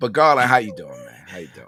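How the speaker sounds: hoarse, rough voice. Speaker greeting another man on the show, in a hoarse voice. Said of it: "My voice is hoarse because of the Ravens".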